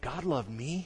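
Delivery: put-on absolute wonder and amazement, awestruck. Voicing how John may have said these words: acting out amazed wonder. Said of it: "with a tone of voice of absolute wonder and amazement".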